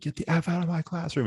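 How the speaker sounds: very high, tearful crying yell. Retelling a professor's outburst at a disrespectful class: imitating a crying professor yelling.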